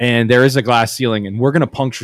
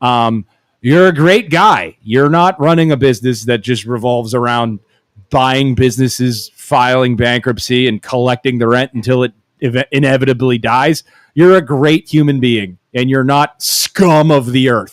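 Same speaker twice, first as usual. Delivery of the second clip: ordinary talk, nothing marked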